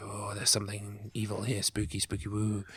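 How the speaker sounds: hushed, spooky, ghostly half-whisper. Describing a game where the stone vibrates, the speaker imitates a half-whispery game voice. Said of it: "you hear a whispery voice go".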